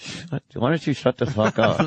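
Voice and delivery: low ventriloquist-style mutter, words held back. Showing how they'd mutter at a talker while smiling: smiling, ventriloquist-style mutter. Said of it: "I could smile and be like".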